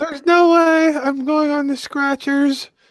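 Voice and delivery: mean, mocking, very high put-on voice. Retelling what she said, in a mean imitation of her. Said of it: "We should probably not be doing that voice".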